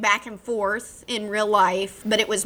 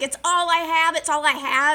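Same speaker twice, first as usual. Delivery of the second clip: put-on high-pitched sobbing, clinging repetition; 7 semitones higher than usual. Speaker retells a woman who keeps filming in the woods: imitating someone crying.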